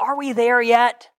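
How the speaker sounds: small, high, piping little voice. Retelling a car trip, voicing a little voice from the back seat. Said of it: "a little voice in the back says".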